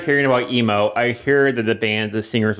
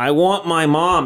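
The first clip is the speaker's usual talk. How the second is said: put-on high, very slow, mild drawn-out wail; 6 semitones higher than usual. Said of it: "got on the floor and started screaming".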